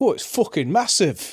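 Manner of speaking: very high, loud northern English man's voice. Recalling a game's swearing voice clip, quoting the bloke in a northern English accent. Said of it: "some bloke in a like northern accent just went".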